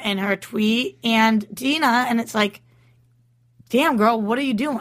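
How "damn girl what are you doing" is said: normal talking voice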